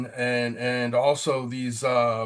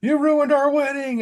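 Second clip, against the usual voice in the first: very high, shrill, high-pitched screaming; 6 dB louder than usual. Retelling what the ex said the morning after the wedding: imitating someone screaming.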